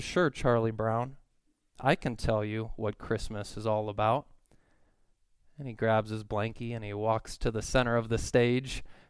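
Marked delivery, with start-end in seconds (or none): none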